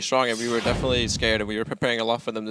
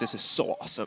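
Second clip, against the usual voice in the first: put-on German accent. Quoting what someone said right after a close fight: German accent. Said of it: "I like your German accent for that one".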